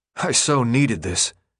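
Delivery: mumbling through a mouthful. Narrator reading a starving character eating fast, mumbling through a mouthful. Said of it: "he mumbled through a huge bite".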